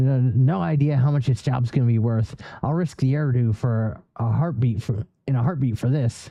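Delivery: ordinary delivery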